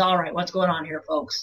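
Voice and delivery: put-on gruff, grizzled old sheriff character voice. Showing how to make a character sound like a man: gruff old sheriff voice. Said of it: "he's a gruff old sheriff and he comes in and he says".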